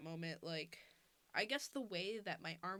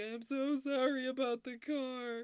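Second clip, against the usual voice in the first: mock very loud, drawn-out bawling sobs; 6 semitones higher, 8 dB louder than usual. Retelling apologizing to parents after a car crash: imitating crying while apologizing. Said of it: "fucking bawling".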